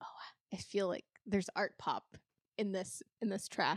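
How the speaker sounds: soft, hushed, unvoiced whisper.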